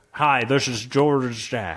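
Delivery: put-on southern gentleman accent. Joking about adding a recording from his dad: imitating dad's southern gentleman voice. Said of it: "a poor approximation of a southern gentleman".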